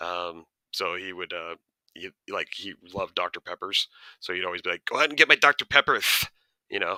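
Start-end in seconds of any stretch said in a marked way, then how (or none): 4.9-6.3 strong lisping impression, higher and louder. Imitating a former boss who loved Doctor Peppers: imitating a boss's bad lisp. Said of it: "another boss that I used to work for that had a really bad lisp".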